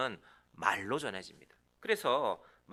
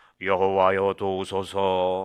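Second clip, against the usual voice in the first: grand, thick, very deep, loud, booming bass voice; 3 semitones lower, 12 dB louder than usual. Reading a psalm verse aloud in a very deep, heavy voice. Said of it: "제일 낮은 웅장한 굵직한 남자 목소리로 이렇게 읽는 것이 적당합니다 ... 제가 그렇게 흉내를 내봅니다. 묵직합니다".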